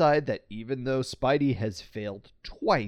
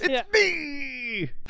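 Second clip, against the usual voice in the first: put-on manic villain yell, higher; 13 semitones higher than usual. Retelling how the Hobgoblin ends the call with Osborn: imitating the Hobgoblin yelling. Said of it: "I love the way he says that".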